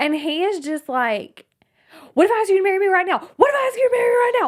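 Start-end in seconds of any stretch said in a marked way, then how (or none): 2.1-4.5 high, rushed, acted-out tantrum yell. A speaker retells a tantrum after a breakup attempt, imitating Leo yelling. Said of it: "And he's like yelling at her".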